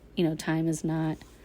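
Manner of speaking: ordinary talk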